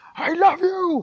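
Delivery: booming, very loud, high-pitched shrill shout. Explaining how cats react to tone, the speaker gives an example: shouting. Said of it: "If you shout on your cats".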